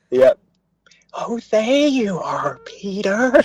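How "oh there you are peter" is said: put-on high, very slow little kid voice. Quoting a favorite movie clip: imitating a little kid's voice. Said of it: "Little kid's voice sort of goes".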